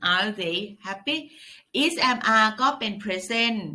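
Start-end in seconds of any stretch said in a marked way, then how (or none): 0.1-1.2 pitch rises at the end of "happy". Teaching English questions in Thai, pitch rising high on happy. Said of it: "ตั้งขึ้นเสียงสูง".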